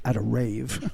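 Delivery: under-the-breath mutter. Retelling what a man added to his partner's story, muttered under his breath. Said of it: "under his breath".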